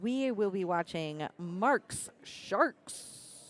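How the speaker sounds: very slow, careful, word-by-word delivery. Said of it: "I'm gonna have to say that slow".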